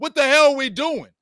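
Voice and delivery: shrill, very high yell. A coach retells yelling at his squad from the sideline while losing, acting out a sideline yell. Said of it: "That's what I'm yelling at my squad".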